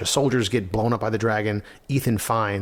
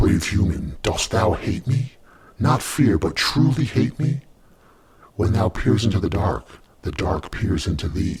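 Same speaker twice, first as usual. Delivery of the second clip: voice of a great dragon; 3 semitones lower than usual. Narrating a scene where a dragon addresses a human, in a dragon voice. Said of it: "my voice sounds like a dragon voice".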